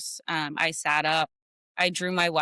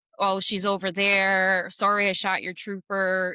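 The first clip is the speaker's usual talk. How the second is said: play-acted, goading, jeering, taunting tone; 3 semitones higher than usual. Retelling what a suspect said to police, imitating someone taunting. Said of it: "taunting them like".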